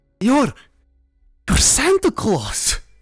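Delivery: horrified. Narrator reads the count's line after he reads your thoughts, horrified. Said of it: "He says in horror".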